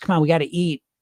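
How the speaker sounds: plain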